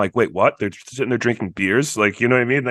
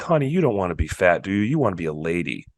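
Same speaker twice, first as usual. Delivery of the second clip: low, patronizing, condescending, talking-down tone; 4 semitones lower than usual. Describing how an evil character talks to Meg, mock-condescending tone. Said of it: "in a very condescending way".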